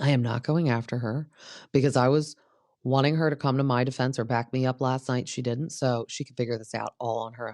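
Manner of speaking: ordinary delivery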